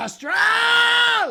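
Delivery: very loud, very high, throaty, drawn-out scream. Imitating a fan in the crowd for the chat: imitating a throaty fan scream. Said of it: "It's gotta be real throaty".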